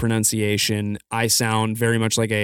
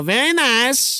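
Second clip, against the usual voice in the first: high, slow, stretched-out impression voice. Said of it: "we talked like Borat".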